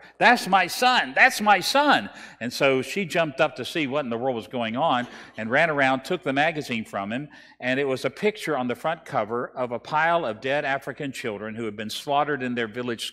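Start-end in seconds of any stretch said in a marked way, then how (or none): 0.2-2.1 shouting, higher and louder. Retelling a student's reaction to a magazine cover: imitating someone shouting. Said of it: "he started shouting".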